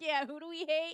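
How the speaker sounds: high chiming-in agreement. Mocking someone agreeing from the background: imitating Aries agreeing in the background. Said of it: "Not Aries agreeing, going, "Yeah," like, in the background".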